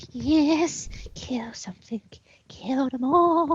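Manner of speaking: spine-chilling, creepy, high-pitched eerie voice. A player in a tabletop game, speaking in a creepy voice. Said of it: "You give me shivers when you start going into that voice".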